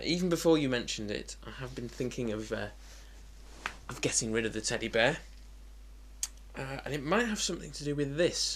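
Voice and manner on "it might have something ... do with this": normal talking voice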